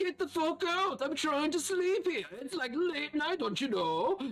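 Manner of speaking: very high-pitched hollering. Someone in the smithy orders an intruding visitor out late at night, yelling. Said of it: "you hear this yelling from the smithy".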